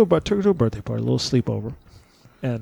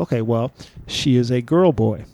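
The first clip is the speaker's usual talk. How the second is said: ordinary delivery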